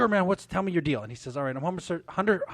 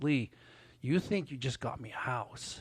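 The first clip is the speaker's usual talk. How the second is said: put-on choked-up voice, quieter; 7 dB quieter than usual. Retelling what he said to the speaker: imitating choked-up voice. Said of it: "he's all choked up".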